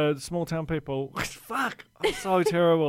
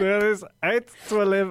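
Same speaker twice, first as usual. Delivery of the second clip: put-on Italian accent, higher, louder; 5 semitones higher, 4 dB louder than usual. Quoting a funny remark by an Italian guy, imitating an Italian accent. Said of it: "Oh my God, what accent was that?".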